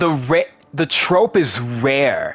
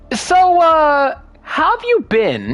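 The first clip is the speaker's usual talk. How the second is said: very high, slow, swooping, sing-song, offhand tone; 14 semitones higher, 3 dB louder than usual. Mocking a game character's casual greeting: imitating Dottore. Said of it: "and he's like".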